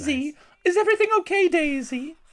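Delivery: very high put-on proper English mum accent. Speaker imitates British moms calling to Daisy, English accent. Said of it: "I had a better English accent earlier in the day".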